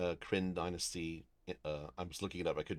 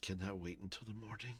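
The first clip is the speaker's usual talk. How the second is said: put-on much quieter elderly old man voice; 3 semitones higher, 8 dB quieter than usual. Voicing a character in an acted scene, the speaker uses an old man voice. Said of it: "I'm giving him an old man voice".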